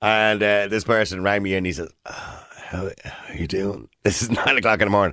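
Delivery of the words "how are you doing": mocking put-on sick voice, quieter and slower. Retelling a coworker calling in sick, imitating a fake sick voice. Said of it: "stop putting on the stupid voice".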